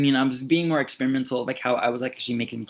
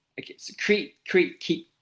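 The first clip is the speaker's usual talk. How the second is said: pitched-up, stuttering, tripping over the words; 5 semitones higher than usual. Explaining creative thinking in a video, catching themselves stuttering. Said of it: "I'm stuttering".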